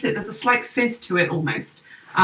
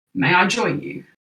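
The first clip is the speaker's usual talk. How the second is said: put-on gruff stranger voice. Storyteller voicing a stranger who approaches the group, in a gruff voice. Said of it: "the gruff voice of a stranger say".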